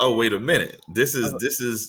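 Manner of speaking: ordinary talk, nothing marked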